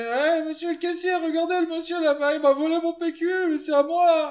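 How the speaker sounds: very high, shrill, screechy put-on rattle voice. Player's character calls out to a cashier, shrill rattle voice. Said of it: "je vais faire voix de crécelle".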